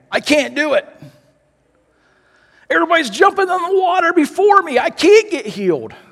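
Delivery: very high-pitched, exasperated, frustrated lament. Imagining the invalid's words after Jesus asks him, imitating a frustrated voice. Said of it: "imagine the frustration on the invalid's voice saying".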